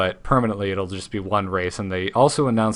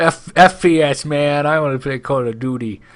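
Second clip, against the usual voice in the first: dopey, dim-witted dumb-guy voice, high and raised; 6 semitones higher, 5 dB louder than usual. Acting out a hypothetical gamer, the speaker answers the other speaker; talking like a dumb idiot. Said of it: "I said it like a dumb idiot".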